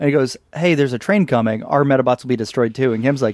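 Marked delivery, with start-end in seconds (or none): none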